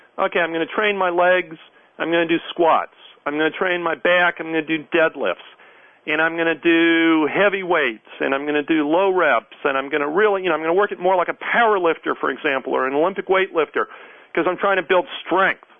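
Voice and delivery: ordinary delivery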